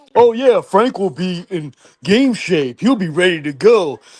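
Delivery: high, slow mocking clueless voice. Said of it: "Chris Matthews, saying".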